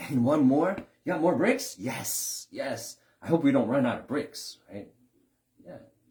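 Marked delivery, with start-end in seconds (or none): 0.0-4.6 mock very loud, gleeful, joyful, eager cheer. Acting out a homeowner building their own house: imitating a joyful builder. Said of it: "Every brick is joyful".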